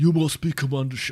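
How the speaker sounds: attempted, put-on South African accent. Quoting a game line after being asked: imitating a South African accent. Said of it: "You gotta say it in the South African accent".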